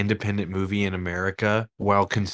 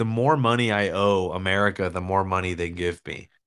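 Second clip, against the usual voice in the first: usual speaking voice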